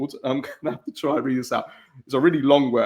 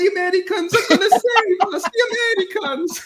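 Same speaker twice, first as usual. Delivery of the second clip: very high-pitched put-on Italian accent; 3 dB louder than usual. Acting out Italians in a scene reacting to a radio bulletin, put-on Italian accent. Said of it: "every time you do that accent".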